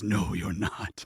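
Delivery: darkened, deep, ominous, menacing tone. Voicing a shadowy figure who denies the Rose Knight: deeper menacing voice. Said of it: "his voice changes in tone, something deeper".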